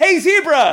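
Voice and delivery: high, belted, loud shouted voice.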